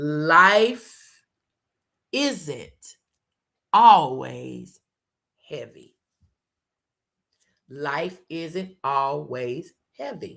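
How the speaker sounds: very slow, deliberate, each word drawn out. Speaker giving a talk, repeating the key point, speaking slowly. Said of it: "I'm going to say this real slowly".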